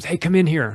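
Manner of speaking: hollering loudly. Retelling how the president called out from his office: imitating someone yelling. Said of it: "and he yelled at me".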